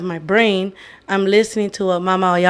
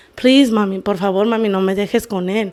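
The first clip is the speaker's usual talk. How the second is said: put-on crying, tearful pleading voice. Retelling a ceremony memory of begging mom not to leave, imitating crying and pleading. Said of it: "crying to my mom".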